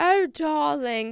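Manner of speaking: put-on British accent. Trying out a british voice for the bit, in a bad british accent. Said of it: "I'm going to try to be British".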